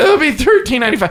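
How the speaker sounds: put-on words broken by high hysterical laughter. Retelling a drive-thru lady at Taco Bell, imitating hysterical laughter while talking. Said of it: "And she's like laughing hysterically".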